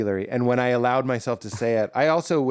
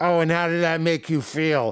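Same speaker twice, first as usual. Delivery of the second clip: put-on Boston accent, pitched up, tongue through teeth; 5 semitones higher than usual. Imitating relatives in Boston asking about feelings: imitating a Boston accent. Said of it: "your Boston accent requires you sticking your tongue through your teeth".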